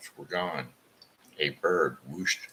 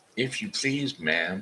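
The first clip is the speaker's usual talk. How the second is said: sweet, high little voice, as sweet as possible; 5 semitones higher than usual. A girl curtsies to a woman, speaking as sweetly as she can. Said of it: "as sweetly as she could".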